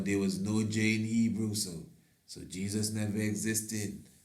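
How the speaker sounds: ordinary talk, nothing marked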